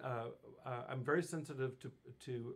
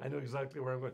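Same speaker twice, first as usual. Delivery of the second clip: ordinary delivery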